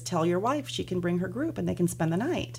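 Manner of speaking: ordinary delivery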